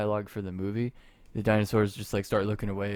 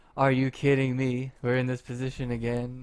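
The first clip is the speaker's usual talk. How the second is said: mock complaining voice, higher pitched; 3 semitones higher than usual. Imagining a movie scene, imitating Jada Pinkett Smith complaining. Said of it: "she'll be like".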